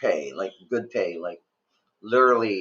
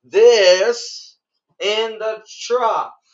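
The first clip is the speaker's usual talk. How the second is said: very high, very slow, raised voice; 13 semitones higher, 6 dB louder than usual. Retelling their first day on the job, pointing at a man: retelling a raised voice. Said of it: "starting to raise my voice".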